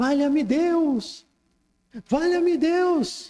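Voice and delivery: play-acted shrill, panicked wailing, "Deus" drawn out. Retelling a shaky plane ride: imitating hysterical screaming. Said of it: "E o Chico também entrou em histeria".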